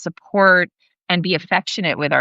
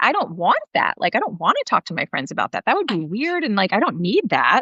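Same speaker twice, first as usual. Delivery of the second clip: incredulous tone, higher; 3 semitones higher than usual. Retelling how her son answered about sharing feelings: imitating son's incredulous tone. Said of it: "he's so incredulous".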